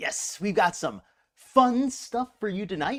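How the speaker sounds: cracked voice breaking mid-line. Opening a live show and greeting viewers, voice cracking. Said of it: "My voice just cracked".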